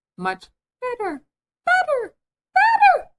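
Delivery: very high, very loud, shrill, rising, swooping squeak. Narrator reads the Queen answering Alice, voice rising into a squeak. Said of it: "her voice rising into a squeak".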